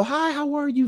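tiny, very high, hushed, mouse-like voice. Describing a quiet woman's relatives, imitating their mousy half-whisper. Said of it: "Very mousy. She has a quiet voice".

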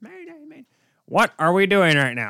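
rough put-on voice. Ranting about a losing hockey team, doing a Rick Jeanneret impression. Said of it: "that's my best Rick Jeanneret impression".

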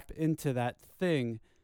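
ordinary delivery

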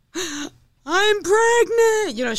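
mock hysterical crying. Recounting how she announced being pregnant, imitating hysterical crying. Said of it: "She was like all hysterical".

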